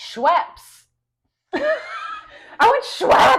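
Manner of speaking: booming, very loud, very high, very slow drawn-out yell. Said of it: "yelling through the speaker that he wants".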